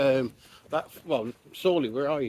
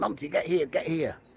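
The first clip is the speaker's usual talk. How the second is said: mild called-out shout in a put-on man's voice; 4 semitones higher than usual. Retelling a dog owner calling his dog back: imitating a man shouting. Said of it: "So he's shouting".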